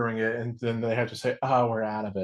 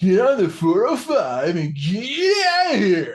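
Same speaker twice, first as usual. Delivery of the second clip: put-on very high voice with Southern California accent; 9 semitones higher, 8 dB louder than usual. Recall the SNL sketch with Fred Armisen and Bill Hader, in The Californians voice. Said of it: "the Californians from S N L ... with the voice like".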